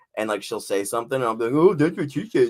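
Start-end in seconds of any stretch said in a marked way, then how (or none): 1.6-2.5 teasing, mocking tone, pitched up. Retelling teasing a partner who is being obnoxious: imitating someone with a mocking voice. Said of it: "that's the voice I do to Danielle when she's being, like, obnoxious".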